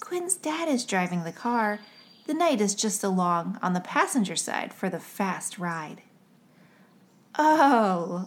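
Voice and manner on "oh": said with a laugh, laughing out the word. Two listeners react after one child corrects another, laughing. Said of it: "laughed Grace and Josiah".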